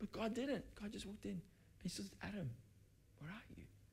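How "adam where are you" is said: hushed, peaceful, gentle whispered calling. Acting out God calling Adam in the garden: very peaceful, gentle God voice. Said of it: "That's very peaceful, very gentle, not angry".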